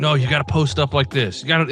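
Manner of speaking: shouting. Retelling a dream where a man shouts corrections on a basketball court: imitating Daniel Rogers shouting. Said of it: "every time he shouts at me and corrects me".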